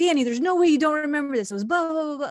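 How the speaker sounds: super excited, fast talking. Retelling his younger brother recounting a shared memory, imitating brother's excitement. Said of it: "super excited".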